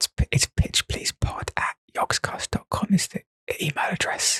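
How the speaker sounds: unvoiced, hushed whisper.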